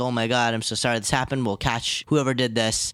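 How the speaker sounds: ordinary delivery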